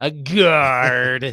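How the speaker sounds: loud put-on pirate voice, drawn-out. Saying a word after being asked to say it like a pirate: put-on pirate voice. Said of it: "You have to say it like you're a pirate".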